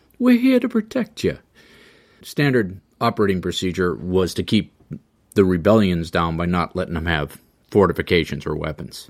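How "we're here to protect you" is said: put-on, very high-pitched Sicilian accent. Voicing the Romans telling a region they'll protect it, in a Sicilian accent. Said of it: "I should do that with a Sicilian accent".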